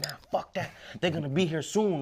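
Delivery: frantic, alarmed, panicked outburst. Retelling a call about arrests, quoting own past words: retelling own panicked words. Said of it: "I'm just panicking".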